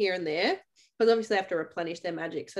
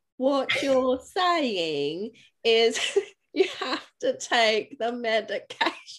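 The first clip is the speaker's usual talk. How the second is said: terrible put-on British accent, slow, pitched up, drawn out; 5 semitones higher, 3 dB louder than usual. Speaker imitates a woman's terrible accent to friends, in a slow bad British accent. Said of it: "She goes really like slow".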